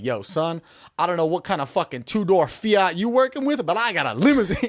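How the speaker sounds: boastful, cocky swagger, showing off. Retelling what a father said to his young son: imitating a bragging flex. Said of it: "he said it almost like flex".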